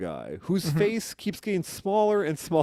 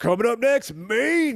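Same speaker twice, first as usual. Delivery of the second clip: loud, drawn-out club DJ hype voice; 6 semitones higher, 5 dB louder than usual. Asked to say a band name as if introducing the band: strip club dj announcing. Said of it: "sound like you're you're DJing at a strip club".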